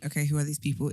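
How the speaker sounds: ordinary delivery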